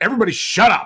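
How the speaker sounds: very high, sharp yell. Retelling a moment of taking charge at an injury scene: retelling yelling shut up. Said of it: "usually I don't yell at people to shut up".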